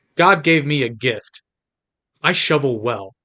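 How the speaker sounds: flat, dry deadpan delivery. Quoting a line from a comedy movie, William H. Macy deadpan. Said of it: "deadpan delivering".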